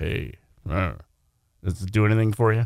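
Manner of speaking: low, deep, seductive come-on voice. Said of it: "we all wanna talk really low".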